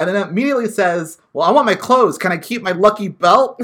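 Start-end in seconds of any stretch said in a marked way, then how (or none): 1.3-3.6 loud, bad, put-on Boston accent. Retelling a man's reply after hearing the news, in a bad Boston accent. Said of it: "in a bad, like, Boston accent".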